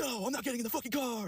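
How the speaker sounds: mock, very high, shrill, all-out screaming fit. Retelling how she refused to get in the car: imitating her screaming. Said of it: "just screaming her ass off".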